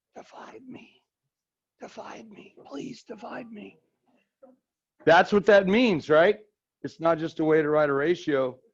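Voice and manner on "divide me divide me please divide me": hushed, very quiet, soft, breathy whisper. Voicing a fraction that asks to be divided, leaning in: soft whisper. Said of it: "it's kind of a soft whisper".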